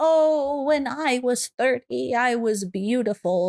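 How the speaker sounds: put-on elderly voice, high and very slow. Retelling what people say about being beautiful at thirty, in a put-on old accent. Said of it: "I'm saying this like an old accent".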